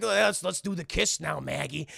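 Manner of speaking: put-on cartoon caveman voice. Retelling a Flintstones Christmas episode, voicing Fred before a kiss: Fred Flintstone voice. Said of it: "Fred's like".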